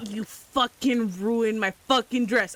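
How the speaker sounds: threatening tone. Confronting the enemy who shot them in a game scene: menacing. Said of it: "I glare at him menacingly".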